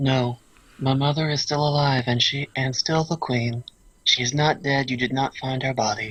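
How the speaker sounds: mechanical, machine-like robotic princess voice. Player answering as Princess Lauren in a role-play scene, Robo Princess voice. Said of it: "the Robo Princess voice".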